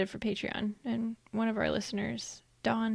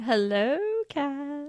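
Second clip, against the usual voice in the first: eerie, creepy put-on voice, pitched high; 5 semitones higher, 5 dB louder than usual. Greeting the cat, the speaker uses a weird creepy voice. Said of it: "As if mine wasn't".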